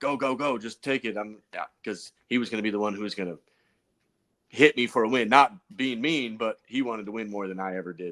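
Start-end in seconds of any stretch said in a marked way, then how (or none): 0.0-1.2 mild, yell-like cheering and urging. Retelling urging a close rival on during a race, retelling his own yelling. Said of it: "I'm yelling like".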